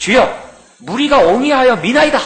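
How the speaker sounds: mock very high voice, a little exasperated, mildly irritated. Retelling Peter's reply to a question, mock-irritated tone. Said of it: "이렇게 좀 약간 좀 짜증스러운 그런 표현으로".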